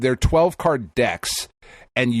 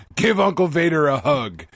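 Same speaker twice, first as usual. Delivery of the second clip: put-on drunk man voice, higher; 4 semitones higher than usual. Joking about a drunk Uncle Vader asking for a hug: drunk Uncle Vader voice. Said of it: "Stumbling, half drunk".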